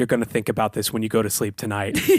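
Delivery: mock, pretend very quiet delivery. Acting out a line to say to a rude stranger: very quietly. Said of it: "very quietly say".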